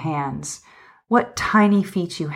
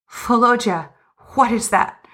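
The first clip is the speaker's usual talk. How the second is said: high voice, cracking, breaking and faltering; 6 semitones higher than usual. Finding a bloodstain on the sheet, she asks him, voice faltering. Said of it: "Her voice faltered".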